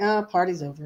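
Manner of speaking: normal talking voice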